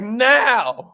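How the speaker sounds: "now" stressed, firm, emphatic and heartfelt. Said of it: "You gotta be like".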